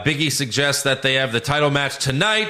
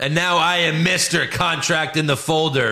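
ordinary talk

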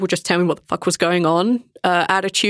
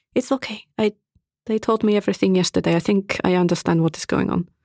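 whispering in a character voice. Voicing a character who whispers reassurance to another character: whispering in character. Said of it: "whispers at him".

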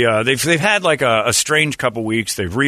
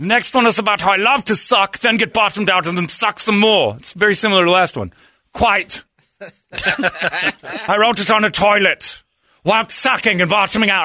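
put-on German accent, higher pitch; 9 semitones higher than usual.

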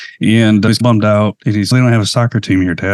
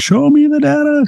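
put-on movie-style screaming, higher pitch. Retelling a movie meme with the line changed: imitating Jerry Maguire screaming. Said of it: "And he's screaming".

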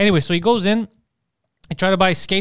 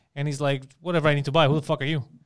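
ordinary delivery

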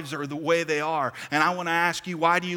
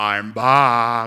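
booming put-on Austrian accent, "back" drawn out; 6 semitones lower, 8 dB louder than usual. Walking into someone's bedroom at night, Arnold Schwarzenegger impersonation. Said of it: "I'd do my best Arnold Schwarzenegger impersonation".

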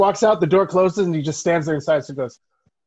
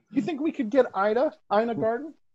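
meek, shy, timid, soft, high voice; 7 semitones higher, 5 dB quieter than usual. Doing a bit where Tom calls Peter: timid Tom impression. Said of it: "it was a timid Tom".

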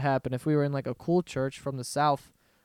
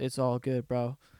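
put-on California bro voice, quieter; 3 semitones lower, 5 dB quieter than usual. Acting out Jesus answering an apology: Jesus as a California bro. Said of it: "imagine that's how Jesus talked".

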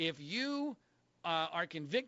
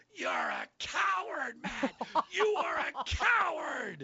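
high, rising, screamed delivery; 8 semitones higher, 4 dB louder than usual. Speaker recounts seeing a man backstage and screaming at him, retelling a scream. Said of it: "and I start screaming".

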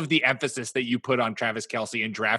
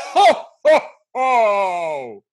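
very high, loud, drawn-out laugh, each ho stretched; 9 semitones higher, 8 dB louder than usual. Starting a round of holiday impressions before the podcast ends, giving a Santa impression. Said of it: "give your best Santa impression".

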